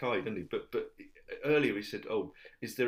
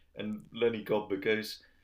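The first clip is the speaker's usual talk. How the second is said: normal talking voice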